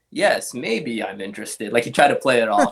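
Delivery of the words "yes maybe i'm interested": mock jokey, slow, playful teasing tone. Retelling how a man tried to play off his interest, imitating a joking reply. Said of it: "jokingly goes".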